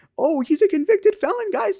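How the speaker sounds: very high-pitched, mocking put-on voice.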